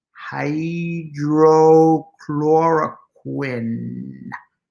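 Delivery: each syllable of hydrochloroquine slowly, carefully drawn out. Imitating how Donald Trump says the drug name, very slowly. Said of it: "he always says it like this".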